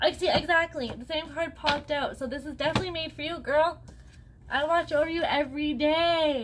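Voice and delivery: French accent. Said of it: "like, a French accent coming".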